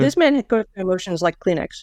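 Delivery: ordinary talk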